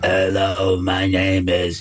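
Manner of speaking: very low, slow, drawn-out heavy-smoker voice. Describing how a film's demon voice was made, imitating a heavy smoker's voice. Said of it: "the voice of a woman that sounds like".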